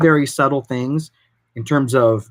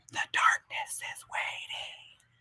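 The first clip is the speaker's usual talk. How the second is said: put-on slow, eerie whisper in a creepy child's voice. Describing a creepy kid who breaks the mood, doing his line: creepy kid voice. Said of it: "creepy ass kid that does one of these things".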